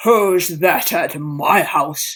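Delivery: rough, gruff, loud calling voice. Narrator reads a voice calling back from inside a farmhouse: gruff voice. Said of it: "A gruff voice called back".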